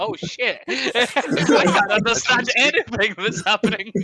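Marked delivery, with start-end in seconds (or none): none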